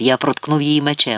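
plain

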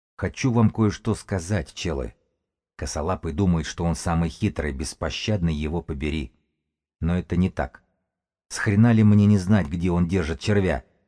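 ordinary delivery, nothing marked

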